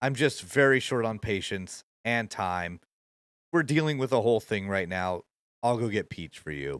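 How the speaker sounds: said dead straight, flat, with no sparkle. A character tells visitors she'll go get Peach for them, deadpan. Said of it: "again, deadpan".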